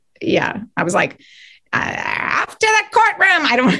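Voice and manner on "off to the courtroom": very high-pitched put-on wicked witch voice. Speaker recalls writing a piece where she takes Dorothy to court: Wicked Witch of the West impression. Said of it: "basically an impression of the Wicked Witch of the West".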